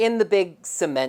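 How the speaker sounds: plain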